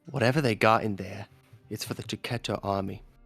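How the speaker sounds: muttered quietly under the breath. A player describes their character walking toward another, saying this under his breath. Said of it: "he's gonna say under his breath".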